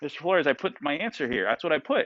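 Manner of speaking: ordinary talk, nothing marked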